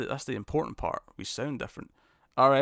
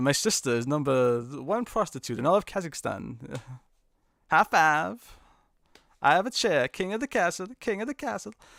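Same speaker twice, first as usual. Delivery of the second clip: bad, fake put-on Kazakh accent; 4 semitones higher than usual. Joking with a co-host about accents, doing a bad Borat impression. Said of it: "my bad Borat impression".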